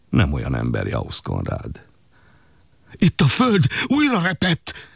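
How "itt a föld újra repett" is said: very high-pitched, shrill outcry. Meyer Lőrinc cries out again to the others, crying out again. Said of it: "kiáltotta újra Meyer Lőrinc".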